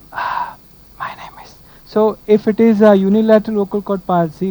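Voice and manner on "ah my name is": airy, breathy, hushed half-whispered voice. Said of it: "they will be having a breathy voice".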